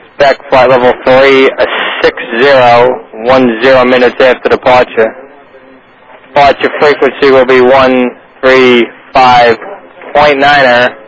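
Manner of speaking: spaced-out, unhurried delivery.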